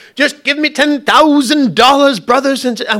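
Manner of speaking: very high, put-on Southern televangelist-style accent. Mocking someone on TV asking for money: mock TV-preacher southern accent. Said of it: "why do they always have a southern accent".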